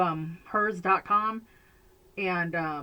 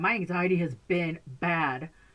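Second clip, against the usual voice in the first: slow, with my stressed. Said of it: "but anxiety has been bad".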